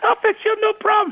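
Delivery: tiny high-pitched voice. Retelling agreeing to fix people up with guys, little high voice. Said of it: "I had a little high voice".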